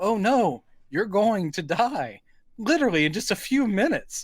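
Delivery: mock gleeful fortune teller voice. Retelling a movie scene, imitating a gleeful fortune teller. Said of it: "actually gleefully say things like".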